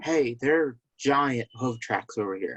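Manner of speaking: soft, hushed whisper spoken aside. In a role-play game, a character whispers over to a companion, whispering. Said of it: "I'm gonna whisper over to Caliph".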